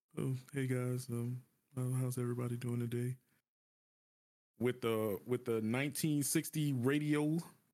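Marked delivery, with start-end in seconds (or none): 0.2-3.2 put-on low energy, unenthusiastic, faster. Speaker contrasts creators, mimicking one who just shows up: imitating a low-energy greeting. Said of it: "and you just show up and just".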